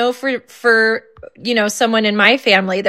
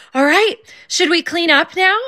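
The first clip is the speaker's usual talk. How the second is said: excited, eager, keen delivery with raised pitch; 7 semitones higher than usual. Parent quoting their son with ADHD: imitating son sounding excited. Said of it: "he said it like he was excited".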